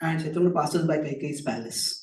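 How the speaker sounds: ordinary delivery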